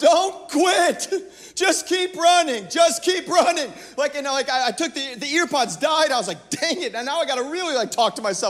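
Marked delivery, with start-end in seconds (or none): 0.0-3.7 loud, stretched-out yelling. Recounting a run after the earpods died, retelling yelling at myself. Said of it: "Literally yelling at myself".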